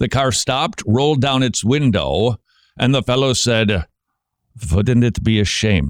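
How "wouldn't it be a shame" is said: put-on Russian accent. Retelling a priest's threat from a car window: Russian accent. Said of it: "they have a Russian accent".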